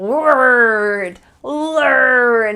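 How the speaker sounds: angry dog-like, drawn-out growly R in "word". Demonstrating a word for pronunciation practice, like an angry dog. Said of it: "Try to sound like an angry dog".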